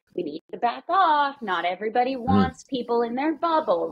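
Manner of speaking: ordinary talk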